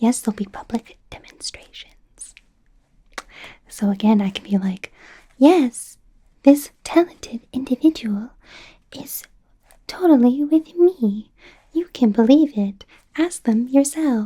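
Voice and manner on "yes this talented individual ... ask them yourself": laid-on ooh-saucy tone, pitched up. Vouching for a talented individual in a demonstration: put-on saucy voice. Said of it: "Ooh, saucy".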